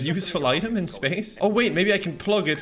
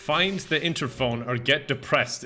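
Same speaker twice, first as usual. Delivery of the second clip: normal talking voice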